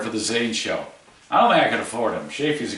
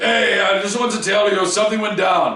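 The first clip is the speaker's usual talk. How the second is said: very high-pitched, put-on dad voice; 9 semitones higher, 4 dB louder than usual. Asked to do an impression of their dad, retelling a phone call: impression of their dad. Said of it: "Can you please do an impression of your dad?".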